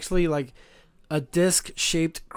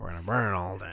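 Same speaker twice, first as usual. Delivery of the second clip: very deep, quiet put-on villain voice; 9 semitones lower, 6 dB quieter than usual. Quoting a line from The Crow, the speaker does a deep voice. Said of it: "He's got the deep voice like this".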